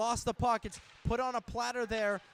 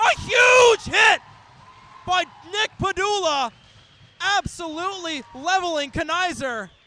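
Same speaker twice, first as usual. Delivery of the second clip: very loud, high, drawn-out yell, voice cracking; 6 semitones higher, 13 dB louder than usual. Student commentator calling a huge hit, excited voice crack. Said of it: "You could tell by the voice crack".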